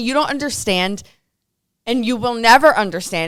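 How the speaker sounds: ordinary talk, nothing marked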